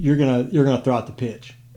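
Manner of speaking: plain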